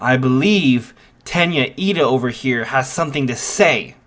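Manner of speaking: normal talking voice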